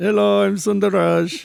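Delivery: drawn-out rough character voice. Playing a fisherman from the story, introducing himself: playing Sundar Raj. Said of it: "I'm doing the head wiggle thing".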